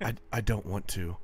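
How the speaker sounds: barely-there, faint, tiny hushed stage whisper. Retelling how the other speaker answered when asked why he didn't talk: imitating a faint half-whisper. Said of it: "in the faintest whisper".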